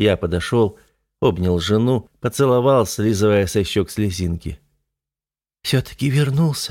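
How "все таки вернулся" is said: relieved sigh, breathed out. A wife greets her returned husband, speaking on a relieved exhale. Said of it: "облегченно выдохнула она".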